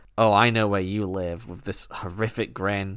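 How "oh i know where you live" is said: ordinary delivery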